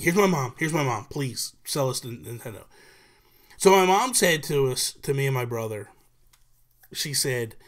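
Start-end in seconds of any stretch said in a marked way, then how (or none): none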